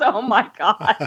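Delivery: put-on mortified, exasperated, embarrassed groan. Retelling a husband's reaction with head in hand: imitating an embarrassed groan. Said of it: "my husband just puts his head in his hand and goes".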